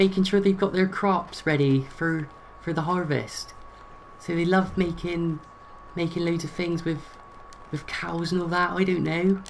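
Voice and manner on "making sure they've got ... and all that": Devon countryside farmer accent, pitched up. Showing how people from Devon sound, in a Devon countryside farmer accent. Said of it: "So they sound like this".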